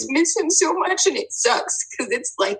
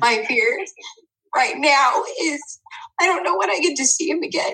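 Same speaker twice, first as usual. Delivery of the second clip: tearful voice welling up, almost in tears; 4 semitones higher than usual. Apologizing that they're about to cry, on the verge of crying. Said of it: "I'm gonna cry".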